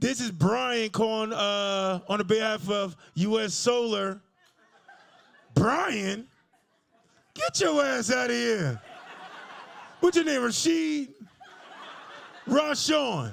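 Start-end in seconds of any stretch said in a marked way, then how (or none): 0.0-4.2 cold-call telemarketer voice with "on" drawn out. The speaker imagines his sales call under the name Brian; own imagined telemarketer voice. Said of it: "I can hear myself now".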